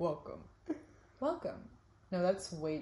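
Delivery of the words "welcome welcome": soft, whispered, hushed newscaster delivery. Practicing the intro to Therapy Sundays, in a weather reporter voice. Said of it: "That's like a weather reporter voice".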